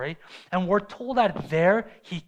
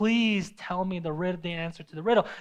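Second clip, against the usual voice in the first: put-on tearful, crying pleading. Retelling a woman begging Samson for the answer: imitating tearful pleading. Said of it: "pleading with Samson day and night, crying".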